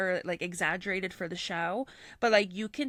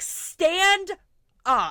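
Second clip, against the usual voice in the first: very loud, shrill, high-pitched scream; 10 semitones higher, 10 dB louder than usual. Retelling watching a couple on TV, reenacting screaming at the screen. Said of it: "screaming at my T V".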